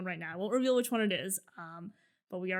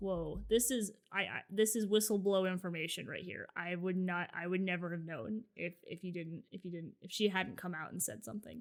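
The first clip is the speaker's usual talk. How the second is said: normal talking voice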